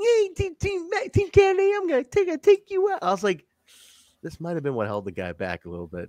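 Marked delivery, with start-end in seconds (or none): 0.0-3.0 very high-pitched, hard, menacing tough talk. Imitating a wrestler trying to sound tough: high-pitched Elix Skipper voice. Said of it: "Elix Skipper has a very high-pitched voice".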